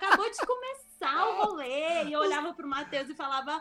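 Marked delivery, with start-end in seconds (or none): 0.0-2.0 put-on drunken rambling, higher. Retelling what she said at her wedding: imitating own drunk talk. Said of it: "Aqueles papos de bêbado".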